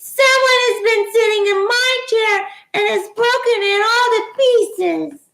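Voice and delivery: tiny, very high little voice. Narrator reads the three bears story, Baby Bear crying in his wee little voice. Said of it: "cried in his wee little voice".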